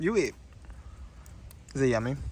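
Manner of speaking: talking while chewing. Eating together, the speaker turns a question to the other person: talking while chewing. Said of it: "I'm literally chewing right now".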